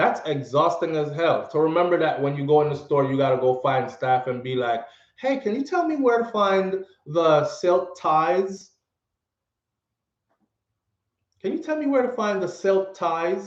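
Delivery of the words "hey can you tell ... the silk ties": sweet, put-on friendly, high-pitched voice. Acting out approaching store staff with a question: put-on friendly high-pitched voice. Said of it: "in a friendly, high-pitched voice".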